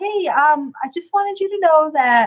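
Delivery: play-acted, forced, feigned calm voice. Acting out a radio report of trouble, speaker uses a fake calm voice. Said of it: "that fake calm voice".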